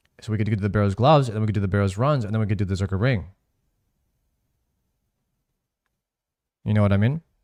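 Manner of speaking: rushed, hurried, very fast talking. Listing game gear plans to another player, talking very fast. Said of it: "Why are you talking like you're on speed?".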